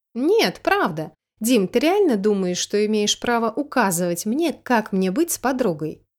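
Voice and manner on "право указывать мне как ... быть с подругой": ordinary delivery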